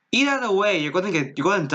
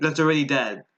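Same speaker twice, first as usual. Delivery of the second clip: plain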